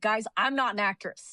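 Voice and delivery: ordinary talk, nothing marked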